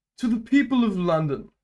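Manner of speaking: put-on upper-class British accent. Trying out an impression mid-conversation, doing a King Charles impression. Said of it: "I could do like a King Charles impression".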